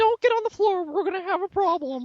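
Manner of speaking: very high-pitched cartoon mouse voice. Asked by someone to pull out the impression, answer in a Mickey Mouse voice. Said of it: "pull out the Mickey Mouse voice".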